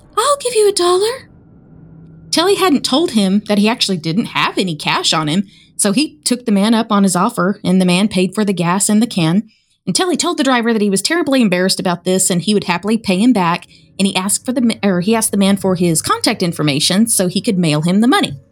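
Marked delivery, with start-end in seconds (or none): 0.2-1.3 very high-pitched, eerie voice. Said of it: "he says in that high-pitched voice".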